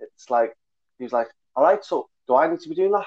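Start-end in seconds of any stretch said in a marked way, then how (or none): 1.6-3.1 put-on Scouse Liverpool accent, higher pitch. Retelling what a Scouse guy asked him, in a Scouse accent. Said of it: "That was my best Scouse accent".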